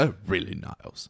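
whispered, soft, breathy put-on character voice. Asked on the spot to do one, giving a Frasier impression. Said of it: "Quick, do a Frasier impression".

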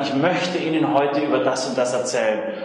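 ordinary delivery

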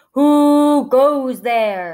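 loud, thundering troll voice, stretched "who". The terrible troll pops out from under the bridge, booming voice. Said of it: "he demanded in a booming voice".

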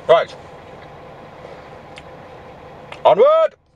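muffled speech through a full mouth, chewing. Speaker having a banana for lunch carries on, talking with mouth full. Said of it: "Sorry, mouthful".

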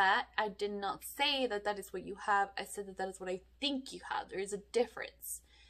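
blunt tone. Recounting a new doctor in Mexico correcting them, imitating a blunt raised voice. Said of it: "She said it very bluntly with a raised voice".

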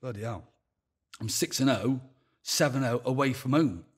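ordinary delivery

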